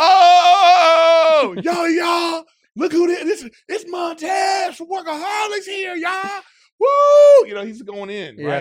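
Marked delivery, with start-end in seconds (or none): 0.0-7.5 very loud, high, very slow, drawn-out hollering. Speaker recounts a man pushing a wheelchair recognizing him, retelling a full-volume shout. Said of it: "Like at full volume".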